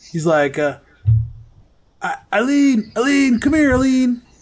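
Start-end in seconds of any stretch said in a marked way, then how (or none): 2.0-4.1 shrill, high-pitched yell, as if across a distance. Voicing a character who calls a young girl over: yelling. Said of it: "he's yelling".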